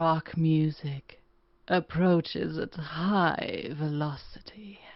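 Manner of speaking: sultry, seductive come-hither delivery. Reading a test sentence in different styles, this time sultry.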